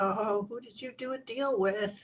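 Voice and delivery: muttered under breath. A player voices their character's reaction to the crash, muttered under breath. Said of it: "I kind of curse under my, under my breath".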